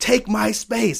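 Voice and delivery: loud, raspy, high screaming, acted out. Retelling an acting exercise shouted at each other: retelling a scream. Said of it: "we're screaming at each other".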